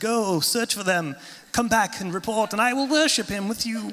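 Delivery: sinister put-on British accent. Telling the Bible story, the speaker acts out Herod's order: Herod in evil British accent. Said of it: "like with this evil British accent".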